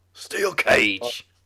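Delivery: loud cool delivery. Showing how William Regal makes a match sound cool: William Regal impression. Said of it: "then William Regal says it, and it sounds so cool".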